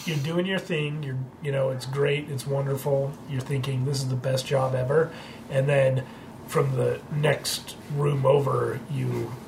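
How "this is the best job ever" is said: ordinary talk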